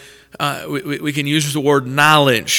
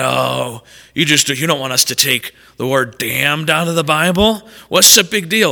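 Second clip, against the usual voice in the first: put-on mocking tone. Imitating people who claim to be just like us, in a mocking tone. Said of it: "who in a mocking tone are like".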